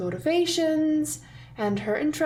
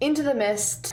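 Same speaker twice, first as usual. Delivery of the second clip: ordinary talk, nothing marked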